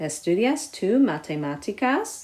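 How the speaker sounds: rising question tune at the end of matemáticas.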